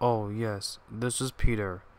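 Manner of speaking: plain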